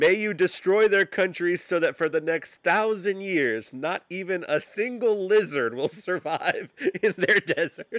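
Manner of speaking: very high, very loud, booming scream. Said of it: "he screams".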